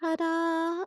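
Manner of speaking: listless, low-energy, drawn-out delivery. Mimicking how Lynette introduces herself, Lynette's low-energy ta-da. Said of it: "her little ta-da is so low energy".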